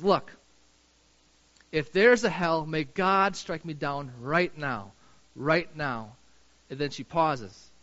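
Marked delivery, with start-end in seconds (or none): 0.0-6.1 raised, somewhat loud voice. Speaker retelling a woman in a video at a heightened point, kind of loudly. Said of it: "kind of loudly".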